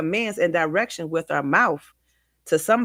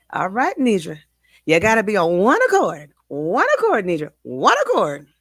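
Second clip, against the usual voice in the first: put-on sing-song grandmother voice; 3 dB louder than usual. Quoting her grandmother's words at her wedding: imitating grandma's tone. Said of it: "I'm gonna say it in her tone".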